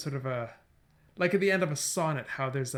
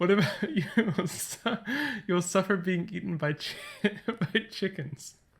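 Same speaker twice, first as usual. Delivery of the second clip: giggling through words, higher pitch; 4 semitones higher than usual. Making up a silly memory sentence, laughing while talking. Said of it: "I don't know why I'm laughing so much".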